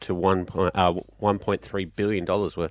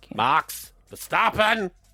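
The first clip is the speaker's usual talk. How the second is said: mock German accent, higher; 11 semitones higher than usual. Saying a driver's name in a quiz, put-on German accent. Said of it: "Just 'cause you do it with an accent".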